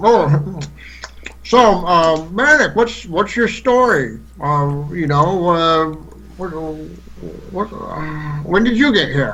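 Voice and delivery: talking while chewing, mouth full of food. Sitting across the table from Manic, Dweod asks him a question, mouth full of bacon. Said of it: "he's got his mouth full of bacon".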